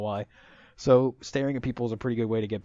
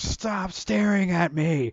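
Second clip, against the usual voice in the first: mock fed-up kid yelling, very slow, loud, drawn-out; 8 semitones higher, 5 dB louder than usual. Retelling how a classmate finally snapped at being stared at: imitating a kid yelling super loud. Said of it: "super loud, and he just yelled it".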